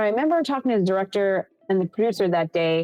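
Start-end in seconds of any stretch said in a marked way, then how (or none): none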